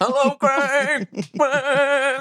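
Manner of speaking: very high, flat monotone robot voice. Joking about pretending to be a house robot at a festival: pretending to be a house robot. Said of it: "Me pretending to be a house robot".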